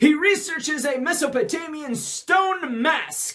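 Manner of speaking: anime dub narrator voice. Reading the story aloud and narrating the plot, announcer voice from American dub. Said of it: "now I'm doing the announcer voice from the American dub".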